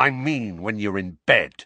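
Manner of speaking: snarling voice. Dudley to his cousin Harry as they walk at night; snarled. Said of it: "Dudley snarled".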